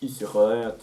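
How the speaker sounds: put-on French accent.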